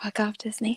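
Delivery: high, soft, whispered ASMR style. Performing a line after being asked for it ASMR-style: ASMR whisper. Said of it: "the A S M R version of".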